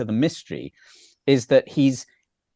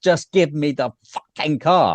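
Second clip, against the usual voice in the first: mock exasperated outburst, held-in yell; 2 semitones higher than usual. Retelling a film scene where a frustrated man yells, imitating a yell. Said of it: "Where he just yells".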